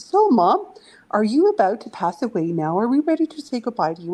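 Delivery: put-on breezy, humorous, sing-song teasing. Retelling a phone call to mom, imitating own joking question. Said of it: "And jokingly, I said".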